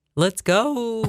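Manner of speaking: voice cracking on purpose. Urging everyone to get the morning going, with a deliberate voice crack. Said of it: "When your voice cracked like that".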